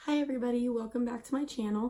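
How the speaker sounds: rough, hoarse, sick-sounding voice. Greeting viewers while having a cold: rough voice from a cold. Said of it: "that's why I sound a little bit rough".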